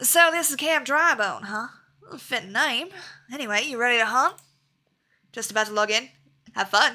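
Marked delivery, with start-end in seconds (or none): 0.0-4.3 put-on southern accent. Reading a game character's lines aloud in a southern accent. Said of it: "if we're gonna give him a southern accent".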